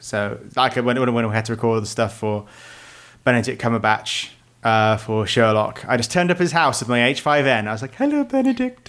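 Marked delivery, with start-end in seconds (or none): 7.9-8.9 put-on piping, very high little boy voice. Retelling turning up at a house to record: imitating own orphan boy voice. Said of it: "I don't know why I spoke like a, like a, like, like an orphan boy".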